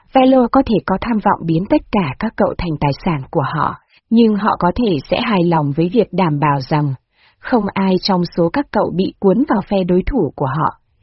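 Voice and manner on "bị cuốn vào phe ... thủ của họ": ordinary delivery, nothing marked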